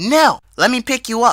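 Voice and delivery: very loud, very high, shrill angry shout. Retelling a phone call, quoting the mother insisting: imitating mom's angry yell. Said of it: "she yelled as if she was angry".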